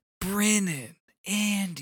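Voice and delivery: hushed, discreet stage whisper, drawn out. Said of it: "he has to whisper".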